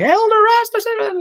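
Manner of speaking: put-on thick Scottish accent. Retelling how a tiny woman used to greet him: Sandra's thick Scottish accent. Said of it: "had a really thick Scottish accent".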